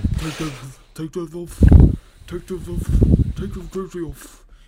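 loud, muffled voice through smacking lips. Retelling how the principal ordered the jersey off: imitating the principal, muffled lip-smacking voice. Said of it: "this is what he sounded like".

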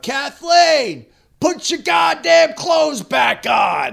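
drawn-out high screaming.

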